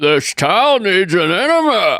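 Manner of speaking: put-on generic old guy voice, bit high. Taking a turn as the group all does Bane: attempted Bane voice. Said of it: "sounded like a generic old man to me".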